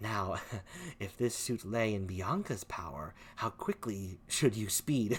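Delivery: low, hushed, secretive voice kept quiet. Playing a character speaking so another can't hear, in a lower tone. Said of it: "in a lower tone".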